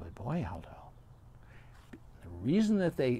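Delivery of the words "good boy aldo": very quiet, soft, much lower pitch. Retelling how dog owners praise their dog on a walk, very quiet praise. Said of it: "they very quietly say".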